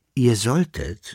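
plain

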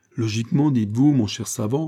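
plain

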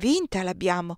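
usual speaking voice

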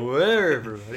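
put-on, overdone, exaggerated, leaned-in hype delivery. Teasing another speaker about their intro, imitating an exaggerated greeting. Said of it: "You lean into it".

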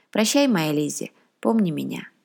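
usual speaking voice

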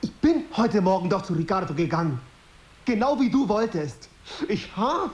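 loud heated voice. Drama scene, answering an accusation of self-pity, too loud. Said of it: "Sei bitte nicht so laut".

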